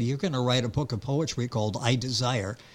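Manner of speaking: plain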